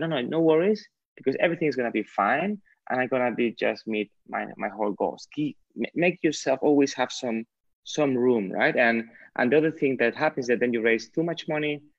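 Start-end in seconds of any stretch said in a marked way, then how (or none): none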